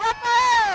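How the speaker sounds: excited, high-pitched, loud hype shout.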